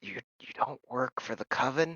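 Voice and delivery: dropped, quiet voice. Playing a confused woman questioning the players, in a lowered voice. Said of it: "she lowers her voice".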